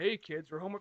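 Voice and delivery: unsettling, creepy, eerie grown-up voice. Retelling a toy commercial's played-back line: imitating a creepy voice. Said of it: "but it says it in the creepiest way".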